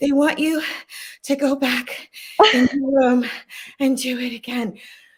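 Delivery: out of breath, broken by pauses. Retelling what the audition reader said after running upstairs: imitating someone out of breath. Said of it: "She's out of breath".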